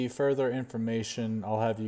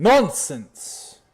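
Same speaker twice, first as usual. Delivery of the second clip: furious, very loud, high angry shout; 6 semitones higher, 11 dB louder than usual. Voicing a character who slams a book shut in a library: angry shout in character. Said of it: "as he shouts that".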